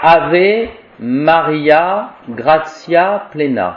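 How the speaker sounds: slow Latin, each syllable pronounced French-style.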